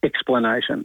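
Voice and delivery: flat, very low deadpan delivery. Asked for a joke, delivering the teacher-joke punchline: deadpan dad delivery. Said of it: "You delivered that like such a dad, just like deadpan".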